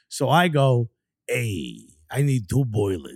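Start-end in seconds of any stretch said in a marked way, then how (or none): 1.2-3.1 put-on old-timer New Jersey accent, pitched very low. Retelling calling his unaware father-in-law's plumbing business, in an older Jersey City accent. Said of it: "So they all sound exactly like this".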